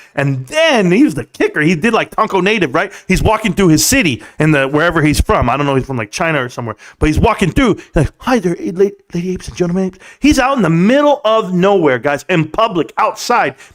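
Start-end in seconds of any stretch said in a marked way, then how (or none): 8.2-10.0 secretive hushed half-whisper, breath only. Imitating a man greeting people while walking through his city; imitating someone half-whispering. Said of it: "And he's still whispering".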